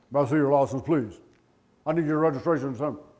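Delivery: loud, stiff, mechanical robot voice. Acting out how a man talked after getting out of the car, robotic voice. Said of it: "He sounded like a robot".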